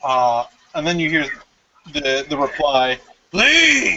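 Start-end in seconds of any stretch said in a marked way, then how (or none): 3.3-4.0 shrill, very high, loud, spectral ghostly cry. Voicing a ghost that tells the players to leave: ghost shouting leave. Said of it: "after it shouted, "Leave,"".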